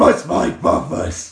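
booming, very loud movie-villain voice. Speaker, having just said Bane comes easier than Batman, tries a Bane voice. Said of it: "I can do a Bane voice much easier than a Batman voice".

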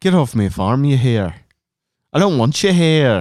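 awkward, bad put-on Australian accent. Imitating how they all talked, trying again, in an awkward australian accent. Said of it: "It's closer".

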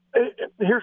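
high, halting stammer. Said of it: "I'm stammering because it makes me gag".

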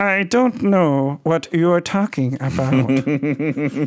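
synthetic robot voice speaking French.

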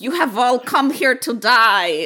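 loud, bad fake Russian accent, die drawn out. Mocking a character's preposterous dialogue, in a terrible Russian accent imitation. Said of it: "that was my terrible imitation of her terrible russian uh, accent".

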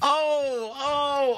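mock wailing oh, high-pitched.

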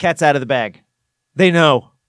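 normal talking voice

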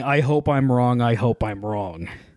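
ordinary talk, nothing marked

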